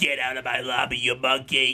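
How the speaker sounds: put-on elderly woman's voice. Doing the requested racist grandma bit in an elderly woman voice. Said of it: "What you came here for was the racist grandma voice".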